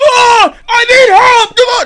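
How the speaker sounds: very high, very loud, slow, shrill, drawn-out scream. Describing a man who screams in an empty store aisle, retelling a scream for help. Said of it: "he just starts screaming like just".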